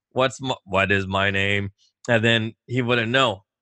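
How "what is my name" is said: put-on robot voice, much lower and slower. Retelling going in to talk to him, in a robotic voice. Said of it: "I'd put on a robotic voice".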